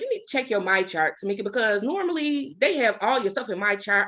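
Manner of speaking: ordinary delivery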